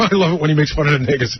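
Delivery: plain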